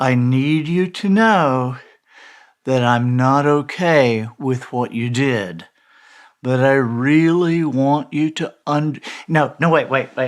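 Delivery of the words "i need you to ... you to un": slow, weird, condescending put-on voice. Acting out a suggested script of what to say, condescending weird voice. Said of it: "let me get my condescending, weird voice again".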